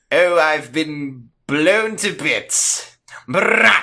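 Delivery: fake voice rolling the R's. Retelling the Doctor's line after being shot: the Doctor rolling his R's. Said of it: "he says, rolling his R's".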